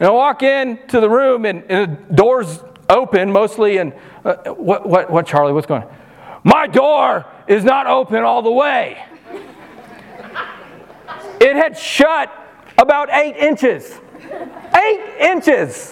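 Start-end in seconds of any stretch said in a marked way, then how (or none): 6.4-15.9 put-on angry toddler voice, much higher and slower. A parent retelling a three-year-old's complaint at night, imitating an angry toddler. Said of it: "Our three-year-old is angry".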